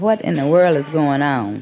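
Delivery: plain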